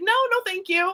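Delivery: play-acted breezy, friendly, easygoing, relaxed delivery. Recounting how they declined to take part, retelling a smiling no thanks. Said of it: "very, very easygoing about it".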